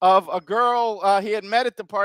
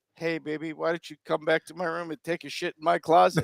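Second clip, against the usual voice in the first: mock whisper, lower and quieter; 4 semitones lower, 4 dB quieter than usual. Acting out a woman at a bar whispering into an ear: imitating a whisper. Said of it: "whispers into your ear".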